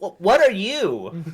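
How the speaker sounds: speaking in a catlike character voice. A player voices their character asking someone what they are, in a cat voice. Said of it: "I love how you did that in your cat voice".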